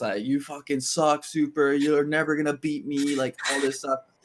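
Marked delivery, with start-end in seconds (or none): 0.2-3.2 mock heated, taunting yelling. Retelling a player yelling at the team after a close win: imitating Jimmy yelling. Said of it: "yelling at us".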